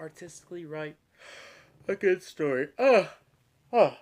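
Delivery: very loud, big open yawn. Talking in conversation after an early morning, speaking while yawning. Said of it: "I'm yawning because I got up early".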